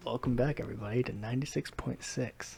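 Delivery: put-on soothing tone. Opening a podcast with friends in a put-on soothing voice. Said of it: "the voice you're doing right now".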